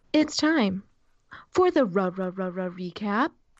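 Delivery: slow, elevator-announcement style announcer voice. Announcing the start of the recap segment: elevator announcer voice. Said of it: "elevator announcer".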